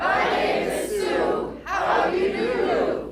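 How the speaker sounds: earnest whisper, said with conviction. Second take of a line for a recorded video; really loud, meaning it. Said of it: "Do it like you mean it".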